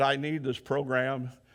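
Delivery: desperate pleading through tears and sobs. Retelling how a man in the program begged to go home, imitating someone crying. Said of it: "he was just crying".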